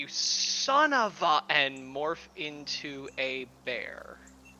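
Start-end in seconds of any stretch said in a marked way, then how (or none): 0.0-1.4 higher, slow shout. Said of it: "Esfel is just going to shout".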